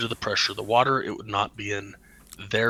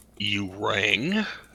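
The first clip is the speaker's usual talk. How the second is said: low, placid, deep giant-whale voice. Narrating a story, speaker voices a whale that popped out of the water: deep, calm whale voice. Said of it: "in a deep, calm voice".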